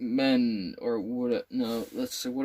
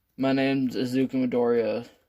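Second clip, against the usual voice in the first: plain reading voice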